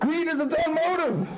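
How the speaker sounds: yelling, pitched high.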